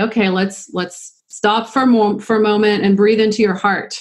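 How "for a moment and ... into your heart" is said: ordinary talk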